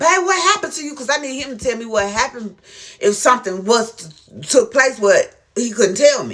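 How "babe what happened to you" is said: play-acted, very high, straining, full-lung yell. Retelling calling to an injured husband on the floor: imitating a scream at top of lungs. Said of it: "I'm straining to the top of my lung".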